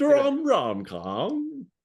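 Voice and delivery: comic put-on English accent. Prompted to say the phrase, the speaker uses a funny English accent. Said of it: "Say it in a funny English accent".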